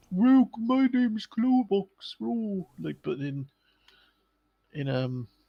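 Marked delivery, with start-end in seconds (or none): 0.1-2.1 very high, loud character voice. Imitating how a game character talks in the English version: imitating Clobox's voice. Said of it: "had that voice in the English version".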